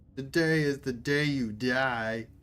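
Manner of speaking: giggling, mocking inhuman voice with long fading end. A voice over the voxcaster taunts the officers on the bridge: mocking inhuman voice. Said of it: "The mocking, inhuman voice giggles hysterically".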